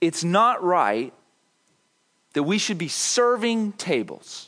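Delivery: normal talking voice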